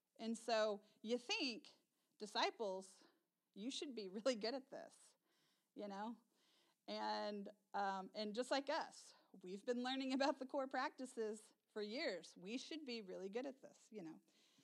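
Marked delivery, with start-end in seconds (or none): 9.4-14.2 quick delivery, dripping with sarcasm. Speaking to listeners about the disciples and themselves: sarcastic. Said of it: "you can hopefully hear the sarcasm there".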